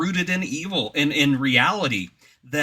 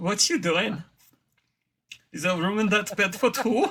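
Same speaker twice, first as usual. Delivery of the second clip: fake, laid-on German accent, pitched up; 6 semitones higher than usual. Recalling a nightmare of a movie villain in the bedroom corner, quoting him in a put-on German accent. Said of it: "he did it with a German accent".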